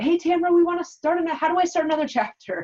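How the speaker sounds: high, loud, thrilled, excited blurting. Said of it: "called me very excitedly".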